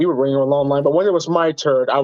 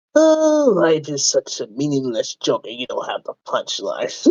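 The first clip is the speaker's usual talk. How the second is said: swooping, sing-song villain voice with pitch moving widely. After mentioning having done Batman, the speaker tries the Joker: Joker voice. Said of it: "speaking of Joker".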